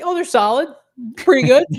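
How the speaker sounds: very high, loud voice rising as it goes. Imagining someone's reaction to bad rivalry uniforms, the speaker imitates a voice rising higher. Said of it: "Voice would get higher as he says it".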